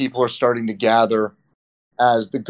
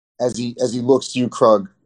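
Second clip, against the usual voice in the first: ordinary talk, nothing marked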